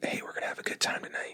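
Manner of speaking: creepy, hushed, breathy, very quiet whisper. Retelling what a man in his fifties whispered to the speaker, retelling a whisper. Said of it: "he whispers to me like".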